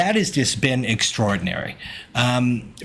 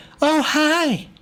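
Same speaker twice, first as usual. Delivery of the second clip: put-on very high, tiny, babyish voice. Recalling a game where a player had a twig monster speak, little baby voice. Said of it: "in like a little baby voice".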